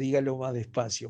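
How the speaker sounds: normal talking voice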